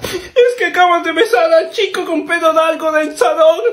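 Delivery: teary voice, spoken while crying. His sibling asks why he is crying now, and he answers: crying. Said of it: "¿Y ahora por qué lloras?".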